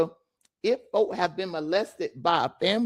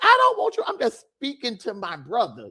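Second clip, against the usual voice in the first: plain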